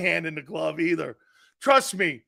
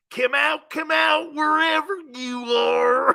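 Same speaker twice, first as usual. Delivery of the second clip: put-on Florida rural southern accent, pitched up; 7 semitones higher than usual. Showing off a put-on redneck voice picked up in Florida: put-on redneck voice. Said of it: "you start talking like this".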